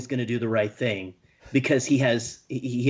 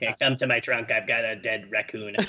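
voice like an evil emperor; 2 semitones lower than usual. Joking about a creepy guy, saying mundane things in Palpatine voice. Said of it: "saying weird, mundane things in the Palpatine voice".

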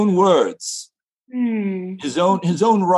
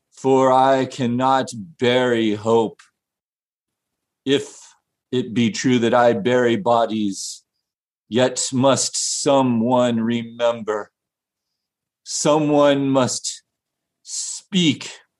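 very deep, low put-on undertaker voice; 7 semitones lower than usual. In a sketch, the town undertaker speaks to the last townsperson: town undertaker character voice. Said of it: "the undertaker of the town".

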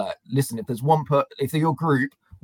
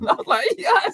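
ordinary talk

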